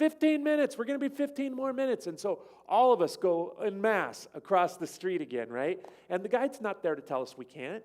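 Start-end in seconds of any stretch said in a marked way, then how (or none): 0.0-2.1 acted, shrill, high and rapid yell. Retelling a story, acting out what a man yelled to the group, retelling a man yelling. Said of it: "he yells out".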